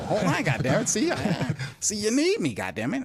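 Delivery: high put-on character voice, pitch swinging around. Speaker doing the voice he could no longer do: Mickey voice. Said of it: "I wouldn't be able to do the Mickey voice no more".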